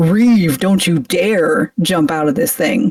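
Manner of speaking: angry, play-acted voice. Comparing two versions of a scene, the speaker acts out Shepard's line: mock-angry Shepard line. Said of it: "Shepard's pissed".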